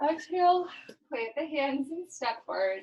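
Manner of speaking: spoken through a yawn. A yoga instructor cues the class to step forward while yawning. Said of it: "Sorry, I'm yawning".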